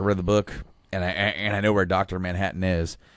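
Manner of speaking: ordinary talk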